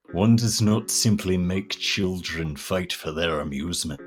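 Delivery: put-on English actor voice. Reading a message aloud in an impression: Sean Bean impression. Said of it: "that's Sean Bean".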